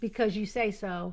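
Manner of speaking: ordinary talk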